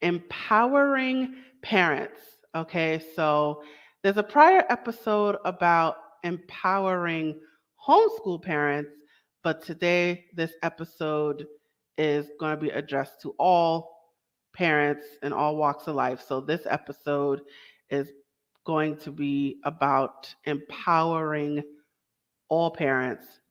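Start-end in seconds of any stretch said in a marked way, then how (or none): 0.0-2.2 slow, high careful word. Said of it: "I gotta say this word slowly".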